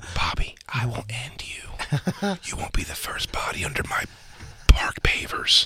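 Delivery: slow, menacing mock whisper.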